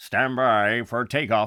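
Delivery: slow, loud launch announcer voice.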